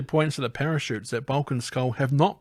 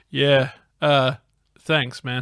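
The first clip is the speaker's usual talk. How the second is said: put-on, slow, disinterested, couldn't-care-less drawl; 3 dB louder than usual. Imitating how a movie character sounds when thanking someone: imitating a disinterested tone. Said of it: "He sounds so disinterested".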